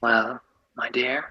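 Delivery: sly, wicked, smirking tone. Voicing a smirking man addressing a nervous girl: wicked, smirking tone. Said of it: "He kind of just smiles wickedly".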